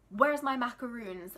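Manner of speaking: put-on talking with full mouth. Retelling a customer eating a sandwich at the counter, imitating talking with mouth full. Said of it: "talking with food in her mouth".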